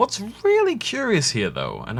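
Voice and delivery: very high, swooping, intrigued, curious documentary-narrator tone. Narrating a scene in a cave, in a high-pitched voice. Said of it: "I say that in high-pitched voice because it's very, very curious".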